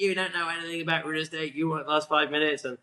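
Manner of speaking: play-acted, screaming, scolding voice. Retelling a screaming match with their dad on the stairs, imitating him screaming. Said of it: "my father screaming at me".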